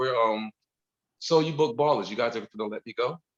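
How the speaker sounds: plain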